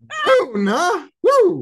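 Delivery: high, loud, excited whoop.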